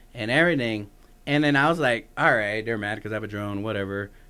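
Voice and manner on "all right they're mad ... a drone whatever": ordinary talk, nothing marked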